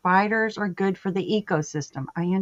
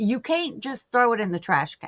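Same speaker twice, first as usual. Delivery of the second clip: play-acted scream kept small, mild half-yell; 4 semitones higher than usual. Retelling yelling at someone who was killing it: imitating own past screaming. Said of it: "and I'm screaming".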